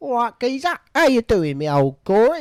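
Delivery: shouted, loud, high-pitched Essex geezer accent.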